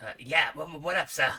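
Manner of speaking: put-on Brooklyn police officer accent. Playing a detective game, giving a character a brooklyn cop accent. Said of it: "kind of a Brooklyn cop accent".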